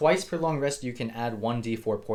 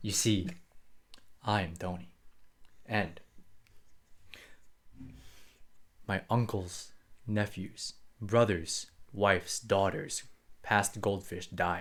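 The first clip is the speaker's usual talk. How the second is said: grim put-on character voice, quieter; 3 semitones lower, 5 dB quieter than usual. Voicing Tony as he tells why he needs apples: grim voice as Tony. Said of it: "turns into something more grim".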